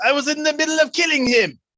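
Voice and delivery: in-character angry yell. Voicing a character yelling after another took his kill: yelling as Guillaume. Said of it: "Guillaume yells".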